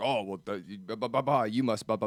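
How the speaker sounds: mock flustered, defensive sputtering and babbling. Retelling how someone answered advice: imitating defensive sputtering. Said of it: "you get defensive and like".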